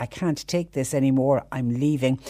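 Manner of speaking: ordinary talk, nothing marked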